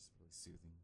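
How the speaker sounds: quiet, close to the mic. Testing a quieter voice close to the mic: quiet, close to the mic. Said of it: "if I get quieter but closer to the mic".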